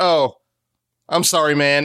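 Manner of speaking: slow, offhand, careless, with no remorse. Retelling a speedster character's apology after running through someone: imitating an unremorseful apology. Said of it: "no significant remorse or anything".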